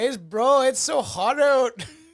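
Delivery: loud, high-pitched fake Indian accent. After an Alberta accent bit, the speaker switches to a put-on Indian accent. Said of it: "Now that's going. Indian".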